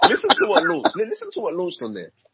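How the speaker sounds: excited laughing build-up into high, loud squeal.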